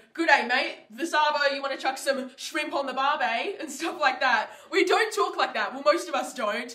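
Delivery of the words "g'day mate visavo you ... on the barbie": clichéd put-on Australian accent. Australian speaker mocks how people imagine Aussies talk, stereotypical Aussie accent. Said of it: "everybody's thoughts on an Aussie is like they walk around saying".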